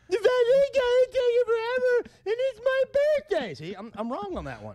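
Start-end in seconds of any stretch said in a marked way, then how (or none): 0.1-3.5 put-on drunk young woman voice, much higher, louder. Showing how you repeat a complaint, in a drunk 24-year-old girl voice. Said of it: "in the voice of a 24-year-old drunk girl".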